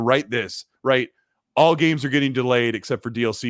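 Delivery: ordinary delivery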